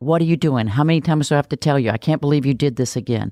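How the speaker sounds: harsh critical scolding voice. Speaking to an audience, showing the voice used when children make mistakes: harsh critical scolding voice. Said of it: "becomes the same voice we use with children".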